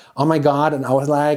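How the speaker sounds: put-on California girl voice. Offering an impression while searching for something to say: imitating a California girl. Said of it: "that's my impression of a California girl".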